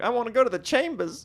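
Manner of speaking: put-on high, childlike voice like a small girl talking. Mocking a woman's weird accent and how she can't say R, imitating a little girl trying to talk. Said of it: "she sounds like a little girl trying to talk".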